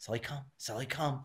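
very quiet, soft, hushed, barely audible voice. Retelling calling a dog back with a coyote nearby, retelling a quiet call. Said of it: "I just real quietly said".

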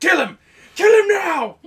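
very loud, high screaming at full volume. Imitating a character yelling to kill an opponent: Vegeta from TFS voice. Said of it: "You sound like Vegeta from T F S".

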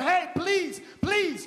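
earnest, pleading, begging tone. Acting out a plea to someone about to die: begging someone. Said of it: "You are begging them".

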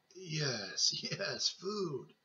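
put-on eager old man voice, "yes" drawn out. Reading a novel, an old man follows his daughter-in-law into the kitchen: eager. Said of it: "said the old man eagerly".

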